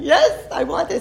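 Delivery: speaking through tears. Retelling a past conversation where they answered a question, retelling own crying. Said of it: "And I'm crying".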